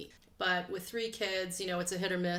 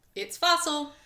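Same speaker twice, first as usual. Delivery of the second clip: big, loud cartoon-character voice; 8 semitones higher, 8 dB louder than usual. Opening the show with the usual greeting: cartoonish voice. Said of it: "cartoonish voice".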